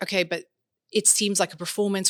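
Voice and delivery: ordinary talk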